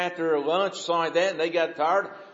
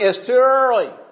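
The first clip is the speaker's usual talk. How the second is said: loud, pitched-up hollering yell; 6 semitones higher, 6 dB louder than usual. Recounting a man yelling from another house about early mowing, retelling his yell. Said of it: "He's yelling".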